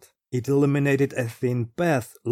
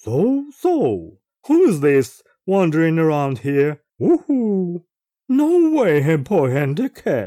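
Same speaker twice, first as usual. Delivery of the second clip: hollow voice with hollow laughter; 3 semitones higher, 4 dB louder than usual.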